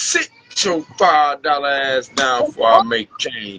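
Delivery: growling, put-on movie kingpin voice. Mid-rant, the speaker quotes a line the way Gorgeous Jim would: Nino voice. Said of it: "in my Nino voice".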